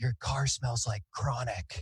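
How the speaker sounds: soft, hushed half-whisper under the breath. Retelling what a lady said while handing back a wallet: imitating a half-whisper. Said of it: "she whispered".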